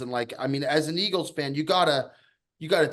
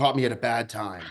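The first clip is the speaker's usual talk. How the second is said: put-on choked-up voice, much lower pitch; 2 semitones lower than usual. Retelling a phone call with Ticket, imitating him choked up. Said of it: "He sounded like he was all choked up".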